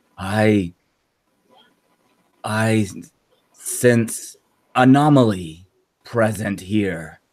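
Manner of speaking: very slow, drawn-out, gravelly, ethereal rasp. A game master voices something the players hear at turn's end: gravelly ethereal voice. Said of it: "you hear this gravelly, almost like ethereal voice".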